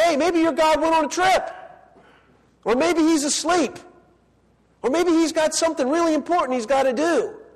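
high-pitched, sarcastic, mock taunting jeer. Retelling how Elijah taunted the prophets of Baal: imitating Elijah mocking. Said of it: "He's making fun of them".

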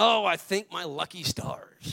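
put-on pirate voice, slow, rough drawl. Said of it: "sometimes I slip into my pirate voice".

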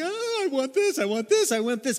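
put-on high, whiny voice. Acting out people who keep asking for more: mock whining. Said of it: "We sit there and just like".

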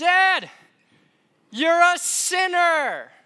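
put-on drawn-out kid's shriek, very high, loud, slow. A father retelling how his daughter yelled back at him, imitating her yell. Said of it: "she yells back".

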